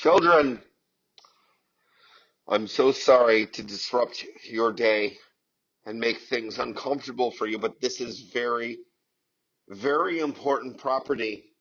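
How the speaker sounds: loud, sarcastic, megaphone-style public announcement voice. Acting out a declaration to children off the bus: mock sarcastic declaration. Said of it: "my sarcastic ass".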